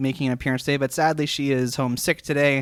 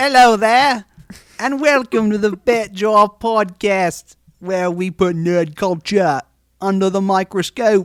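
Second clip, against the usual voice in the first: put-on British accent, high and loud; 6 semitones higher, 5 dB louder than usual. Podcast host opening the fat jar podcast, in a put-on british accent. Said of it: "keep this accent thing going".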